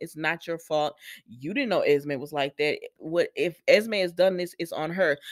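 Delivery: ordinary delivery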